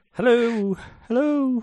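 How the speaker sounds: playful, very high, squeaky sing-song voice.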